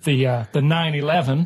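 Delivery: put-on American accent. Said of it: "this is American".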